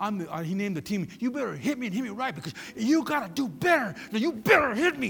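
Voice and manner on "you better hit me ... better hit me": mock hollering, yelled. Speaker retells a player yelling at a bigger guy to hit him, retelling a yell. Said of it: "And he's yelling at him".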